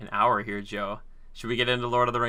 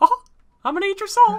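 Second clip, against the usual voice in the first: very high, very loud, squeaky cartoon mouse voice; 10 dB louder than usual. Offering the other speaker a joke intro: Mickey Mouse impression. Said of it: "if you wanna do a Mickey Mouse impression".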